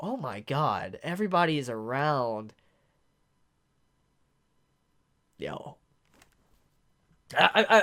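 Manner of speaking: choked-up voice catching with emotion. Reacting to an image of everyone gathered around Kaneki: choked up with emotion. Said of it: "I'm choking up right now".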